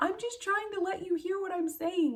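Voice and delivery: put-on very high, loud near-yell. Retelling answering her four-year-old on a loud bus: retelling her own yell. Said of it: "I had to almost yell".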